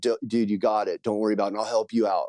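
plain

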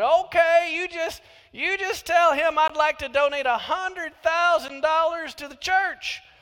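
thick country drawl. Telling a story, voicing a man phoning a church, in a very country drawl. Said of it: "in a very country drawl".

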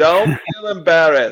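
put-on British accent. Quoting what he said to people, in a british accent. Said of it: "He said it in a British accent".

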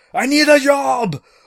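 very high, booming, very loud, drawn-out shout. Retelling how a man left standing alone calls out, retelling a shout. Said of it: "and he just shouts".

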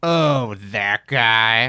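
put-on, loud, very angry, cross tone. Retelling a woman's reaction after posing for a fan's picture, mock-angry tone. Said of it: "in a very angry tone".

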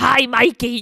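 very loud, sudden, startling jump-scare shout. Retelling a jump scare from the movie: Chucky impression. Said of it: "all my impressions sound the same. Like, my Gilbert Gottfried and my Chucky".

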